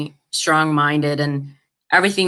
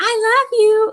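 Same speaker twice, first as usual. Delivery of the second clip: put-on small child's voice, very high-pitched. Retelling what a toddler niece said in a hug: imitating a kid voice. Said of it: "in the, you know, kid voice".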